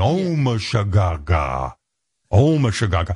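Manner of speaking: very slow, drawn-out put-on baby-talk gibberish. Mocking the guy in the background doing gobbledygook, in mocking gibberish baby talk. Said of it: "It's like baby talk".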